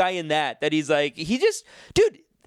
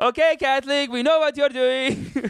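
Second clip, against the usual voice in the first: fake put-on Persian accent, pitched up; 8 semitones higher than usual. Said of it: "I don't know what accent I just gave him".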